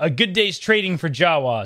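ordinary delivery

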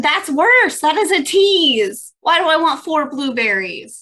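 full-on shouting, pitched high. Someone left the speaker only the last four blueberries; yelling. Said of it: "I'm sorry I'm yelling about blueberries".

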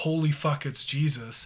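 ordinary delivery

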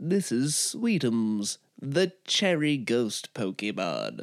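slow, drawn-out, swooping narration. Presenting an invented Pokémon, doing a Pokédex impersonation. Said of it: "was that a good pokédex impersonation".

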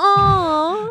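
high, sarcastic, gloating voice.

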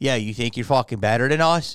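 put-on Philadelphia accent. Speaker imagines how Philly people who knew him would react to his comedy, Philly accent. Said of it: "he's doing the best Philly accent".

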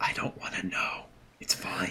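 very quiet, breathy, barely voiced whisper. In a role-play scene, Ruach answers another character's grim question, whispering. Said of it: "Ruach whispers".

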